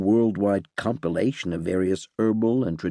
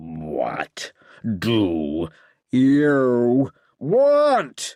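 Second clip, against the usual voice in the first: demonic voice with swooping pitch; 3 semitones higher, 4 dB louder than usual. Reading a story, the demon answers a visitor: demonic voice. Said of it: "They instantly turned to the demonic voice".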